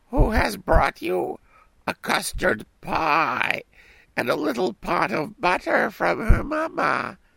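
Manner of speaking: put-on high, piping voice like a small girl. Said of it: "said the wolf, imitating her voice".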